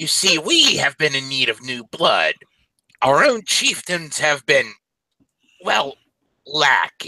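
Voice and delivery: high, swooping goblin shaman voice. A game master voices a shaman goblin making the players a proposition, goblin shaman voice. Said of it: "You're approached by a shaman goblin walking in the distance. Her uh, markings and adornments leave her as noticed as a member of the [name] tribe. / Her uh, / Well, they'll not only be welcomed into".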